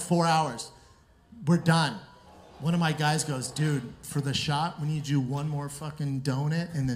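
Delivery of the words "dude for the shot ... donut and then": ordinary talk, nothing marked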